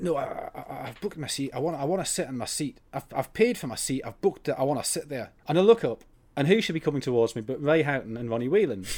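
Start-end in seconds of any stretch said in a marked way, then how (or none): 0.0-5.3 put-on angry, insistent ranting in hard Glaswegian accent. Retelling a footballer on a crowded train demanding his booked seat: imitating angry Glaswegian Ray Houghton. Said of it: "this angry Glaswegian voice going".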